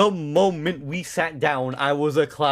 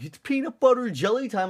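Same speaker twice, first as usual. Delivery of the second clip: high-pitched yell, like a whole crowd hollering; 8 semitones higher than usual. Retelling what everyone yelled on seeing a banana costume: imitating people yelling. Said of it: "everyone just started yell-, yelling".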